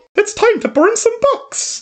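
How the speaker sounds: very high cartoon mouse character voice. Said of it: "That's more Mickey Mouse".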